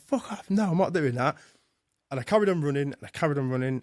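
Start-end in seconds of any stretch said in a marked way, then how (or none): 0.1-1.4 screaming, higher-pitched. Retelling a run, shouting at own brain: imitating own screaming. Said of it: "And I'm screaming".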